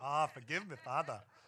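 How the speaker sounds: put-on Jamaican accent. Asked to try accents on a confession line, Jamaican accent.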